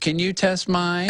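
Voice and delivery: put-on slow little old lady voice. Retelling how an old lady walked up at the drink check: little old lady voice. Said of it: "it's literally this old little old lady voice".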